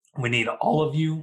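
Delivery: voice cracking and breaking up high. Quoting something one of their BCs used to say: voice cracking. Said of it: "And voice crack there".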